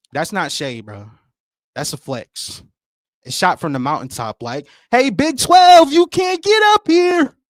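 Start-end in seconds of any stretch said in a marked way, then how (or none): 5.0-7.3 shrill, booming, very loud, high-pitched yell. Acting out a taunt shot from the mountaintop: acting out a yell. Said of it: "Sorry for yelling in the air".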